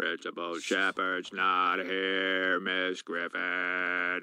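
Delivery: very slow, very low, deep, drawn-out odd voice. Reenacting a movie scene, answering a question about the principal, in an odd put-on voice. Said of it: "Why are you talking like that?".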